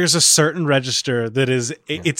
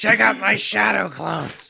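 put-on high, rough, roughened-throat smoker kid voice; 7 semitones higher than usual. Mocking an anime boy who sounds like he smokes, doing a Naruto smoker-throat voice. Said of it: "The fucking throat cigarette".

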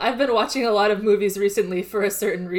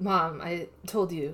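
put-on, very dramatic, theatrical, drawn-out delivery; 3 semitones lower, 7 dB quieter than usual. Retelling how Junpei scolds his smoking mom: imitating Junpei being very dramatic. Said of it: "very dramatic".

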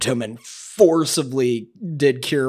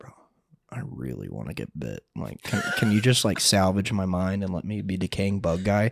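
soft, hushed whispered aside; 5 semitones lower, 5 dB quieter than usual. A player retells whispering a request to the dm: retelling a whisper. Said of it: "I had to whisper to the DM like".

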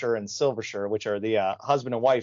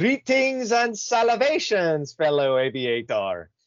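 put-on pirate voice, rolled r, higher pitch; 6 semitones higher, 3 dB louder than usual. Quoting a cartoon pirate's first lines: Don Carnage voice, rolled R. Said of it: "you rolled the R".

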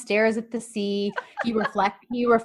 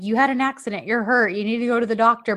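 put-on mumbling. Retelling a drama scene where a dumbfounded man keeps talking: imitating someone mumbling. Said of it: "he's still mumbling".

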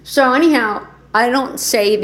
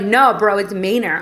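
ordinary talk

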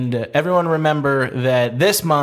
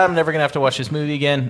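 ordinary delivery

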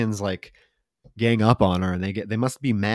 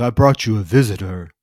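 dropped, deep, low killer voice; 4 dB louder than usual. Retelling a movie killer bringing a visitor downstairs: deep Davy voice. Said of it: "he has a deep voice".

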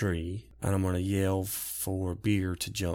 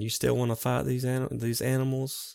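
high, raised calling voice; 5 semitones higher than usual. Yelling back at another character while wolves give chase: yelling back in character. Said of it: "I yell back at Varen".

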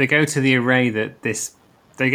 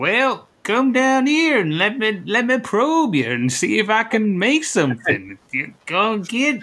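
put-on pitched-up old Southern man voice; 9 semitones higher than usual. Imitating the Caretaker as an old Southern banjo man. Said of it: "like an old Southern banjo man going".

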